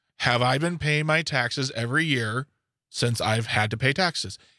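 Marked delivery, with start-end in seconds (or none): none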